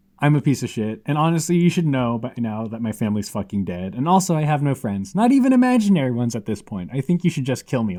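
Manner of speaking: ordinary talk, nothing marked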